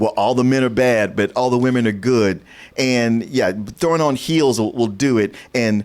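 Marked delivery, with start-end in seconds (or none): none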